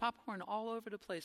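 put-on soft, sweet, cute little toddler voice. Speaker recalling a three-year-old reporting spilled popcorn, imitating Juliet's cute little voice. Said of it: "a cute little voice".

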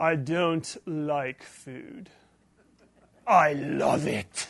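put-on, super pretentious voice. Speaker retells Anton answering the chef Linguini, imitating Anton's pretentious voice. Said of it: "in this like super pretentious voice".

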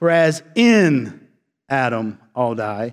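extra weight placed on the word "in". Reading a verse the proper way to interpret it: emphasis on in. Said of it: "The key word here, though, is not the word all, it's the word in. Let me read it for you the proper way".

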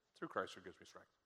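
very quiet, hushed, near-whispered murmur. Demonstrating how people usually say it afterward, in a hushed tone. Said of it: "in a silent, more hushed tone".

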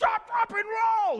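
shrill, very high, loud scream. Retelling a friend's shout when someone caught fire: imitating Sean Macklin screaming. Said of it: "All you can hear him screaming is".

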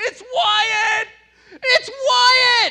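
very high, very loud, shrill, heartbroken scream. Retelling how a child reacted to his hair being cut: retelling Wyatt's scream. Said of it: "he's screaming".

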